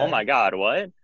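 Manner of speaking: normal talking voice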